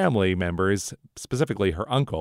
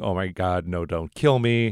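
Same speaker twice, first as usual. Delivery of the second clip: acted-out desperate plea. Recapping a show, the speaker acts out Simone on her knees, retelling someone begging. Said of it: "She's begging".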